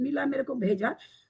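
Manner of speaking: normal talking voice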